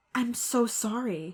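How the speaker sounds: timid voice. Narrator reading a character's line in a story, in a shy voice. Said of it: "he said in a shy voice".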